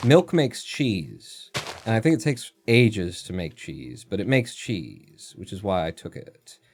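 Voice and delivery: odd, slow, drawn-out musing way of talking.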